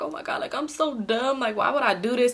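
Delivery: acted talking through tears, tearful crying. Retelling own words in a parked car after breaking down: imitating own crying. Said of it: "So I was just, like, crying".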